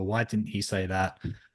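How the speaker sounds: usual speaking voice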